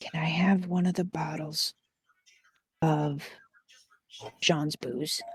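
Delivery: soft, hushed whisper. Voicing a character who leans over asking for booze: whispering in character. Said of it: "just kinda whisper".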